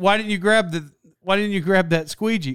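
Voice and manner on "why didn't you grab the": usual speaking voice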